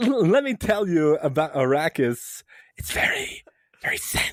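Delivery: very slow, high, stretched, deliberate, drawn-out words. Showing how an actor starts a line: Christopher Walken whispery voice. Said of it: "Christopher Walken goes into that whispery voice".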